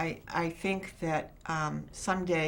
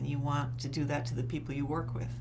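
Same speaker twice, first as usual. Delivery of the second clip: ordinary talk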